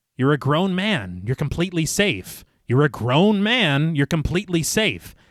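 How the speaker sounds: ordinary delivery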